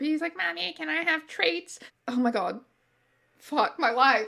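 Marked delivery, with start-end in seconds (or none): 0.4-1.8 put-on high, creaky, twerpy childlike kid voice. Doing the voice they use for their cat when it's being twerpy. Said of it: "the voice I do for my cat".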